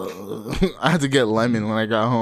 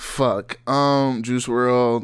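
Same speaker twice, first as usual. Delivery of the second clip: ordinary delivery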